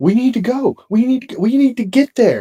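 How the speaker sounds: mock shrill, stumbling, urgent, frantic, panicked pleading. Retelling a past panic about an injured uncle: retelling own panicked plea. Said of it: "I'm freaking the fuck out".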